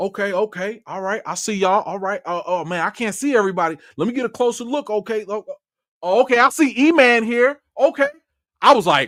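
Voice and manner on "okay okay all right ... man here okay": put-on Oakland accent, pitched higher. Retelling what the director said on a Zoom call: Ryan Coogler Oakland accent. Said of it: "I'm gonna try and do my Ryan Coogler Oakland accent".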